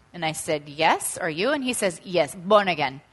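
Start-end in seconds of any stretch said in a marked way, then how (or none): 2.1-3.0 imitated Nigerian accent. Retelling a surgeon's reply during their conversation, in a Nigerian accent. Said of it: "this is Nigerian accent".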